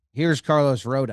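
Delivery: ordinary talk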